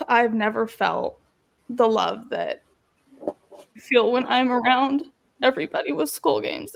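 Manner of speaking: holding back emotion, fighting back tears. Guest describing the love felt around everyone at school games, trying not to get emotional. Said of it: "I'm trying really hard not to get emotional".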